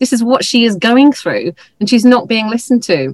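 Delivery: voice turning a bit emotional, feeling welling up. Describing a woman whose GP did not believe her, getting emotional. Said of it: "getting a bit emotional there".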